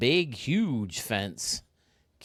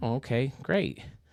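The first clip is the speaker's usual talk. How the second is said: ordinary talk, nothing marked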